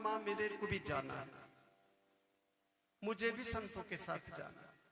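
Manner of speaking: acted-out sobbing, tearful, crying, pleading voice. Retelling a five-year-old's words to his mother: imitating a crying plea. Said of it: "जाकर के रोते रोते बोला".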